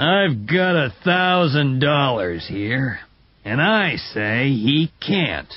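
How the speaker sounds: slow, measured, unhurried, deliberate delivery. Narrator reads one man's challenge to another man's claim: slow and loud. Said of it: "speaking slowly and loudly".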